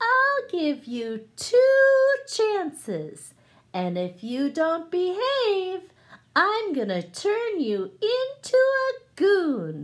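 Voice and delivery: good fairy's high, sing-song storybook voice. Telling Little Bunny Foo Foo, voicing the good fairy's warning: high speaking voice. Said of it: "use your high speaking voice".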